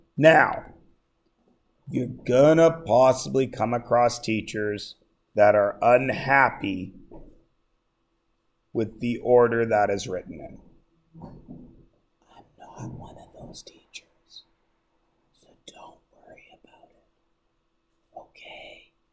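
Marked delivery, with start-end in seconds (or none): 11.2-18.9 soft, hushed whisper. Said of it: "Why is it funny that I'm whispering?".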